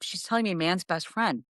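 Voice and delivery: ordinary talk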